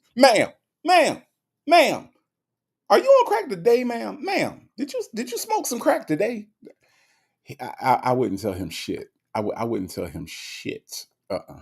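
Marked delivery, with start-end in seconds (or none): 0.2-6.5 high-pitched, swooping, pressing voice. Retelling how a judge questions people in court: Judge Mathis impression with attitude. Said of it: "that's what he do".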